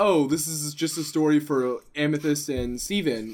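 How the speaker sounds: plain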